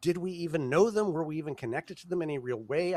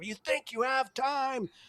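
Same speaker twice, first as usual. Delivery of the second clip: raw, high, confrontational scream; 9 semitones higher than usual. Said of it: "just screaming".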